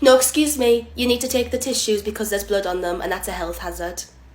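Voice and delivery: normal talking voice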